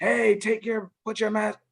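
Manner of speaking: high-pitched hollering yell. Speaker demonstrates a second delivery style for students, yelling down a hallway. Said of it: "if I'm yelling down the hallway".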